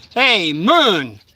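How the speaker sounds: toned-down, mild call-out. Retelling being encircled at the bottom of the stairs: retelling a scream. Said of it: "I scream out".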